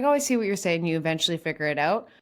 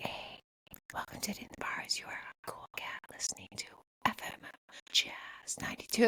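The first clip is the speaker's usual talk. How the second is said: whispered, breathy ASMR-style radio host voice; 14 dB quieter than usual. Showing how the podcast intro should sound: ASMR-style radio host voice. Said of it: "Gotta go full A S M R".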